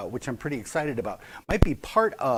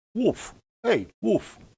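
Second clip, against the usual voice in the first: put-on dog voice way up high, New York accent; 10 semitones higher than usual. Describing the family's Norwegian elk hound in New York: dog with a New York accent. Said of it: "a Norwegian dog with a New York accent was like".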